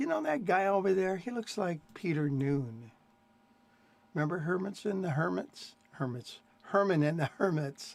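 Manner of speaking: plain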